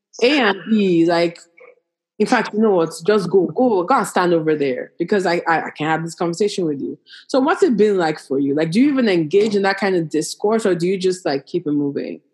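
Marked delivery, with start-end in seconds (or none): none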